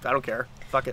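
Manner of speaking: ordinary delivery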